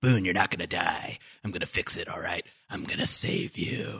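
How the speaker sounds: scary, menacing whisper with eerie intensity. Retelling a scene where Jack speaks to Boone: scary Jack voice. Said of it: "scary voice for Jack".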